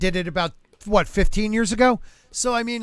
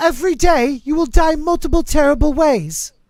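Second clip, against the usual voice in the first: loud, high, proclaiming put-on British accent; 6 semitones higher, 5 dB louder than usual. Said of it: "British accent definitely is hell".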